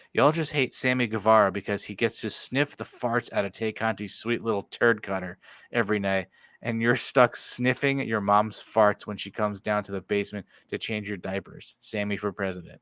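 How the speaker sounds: ordinary talk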